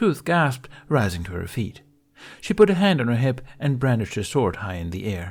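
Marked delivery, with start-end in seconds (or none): none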